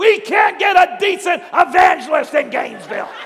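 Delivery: loud yell. Retelling how an audience member yelled out during a sermon: imitating Brother Arnold yelling. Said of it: "he yells out".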